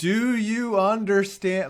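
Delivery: deliberate, over-loud speech. Imitating someone speaking to a foreigner: imitating slow, very loud talk. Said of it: "I should talk slow and very loud to this foreigner".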